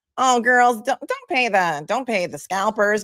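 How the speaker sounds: very high-pitched, squeaky helium voice. Retelling what Jerry told them about getting show tickets, imitating Jerry's high-pitched voice. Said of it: "very high pitched voice".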